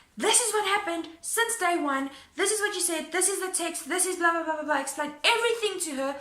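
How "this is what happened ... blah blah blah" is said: exasperated, fed-up, put-on screaming rant, point by point. Retelling a phone call with a woman, imitating own screaming. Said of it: "I start screaming at this woman".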